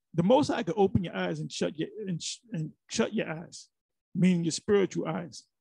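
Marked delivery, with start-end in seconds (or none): none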